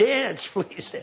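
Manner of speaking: play-acted, high, pleading crowd cry. Retelling how a crowd reacts to the dancing: imitating a screaming crowd. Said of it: "They're screaming".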